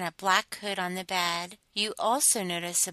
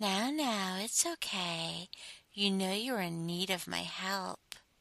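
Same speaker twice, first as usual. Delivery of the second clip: gentle, calming, soothing hushed half-whisper; 6 dB quieter than usual. Restraining the listener on a bed, speak to them in a soothing half-whisper. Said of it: "In my most soothing voice, I whisper".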